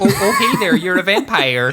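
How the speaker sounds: slight put-on Midwestern accent. Joining the joke on the movie's reveal line: put-on midwestern accent. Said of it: "a little Midwestern kind of funk on it".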